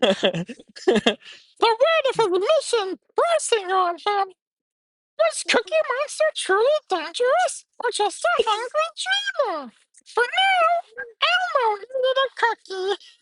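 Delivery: very high-pitched puppet-style monster voice. Reading a story aloud to a listener, the speaker uses Elmo voice. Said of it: "have to say that part in Elmo's voice".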